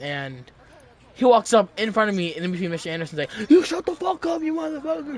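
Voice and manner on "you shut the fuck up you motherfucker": play-acted shrill yelling, right up high. Retelling how a classmate yelled at the speaker: imitating someone yelling. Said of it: "Yelling at me".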